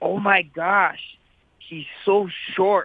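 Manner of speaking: drawn-out whisper at full speaking voice. Retelling how mom tried to whisper but said it out loud: imitating a loud failed whisper. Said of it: "trying to whisper ... but says it loud as day".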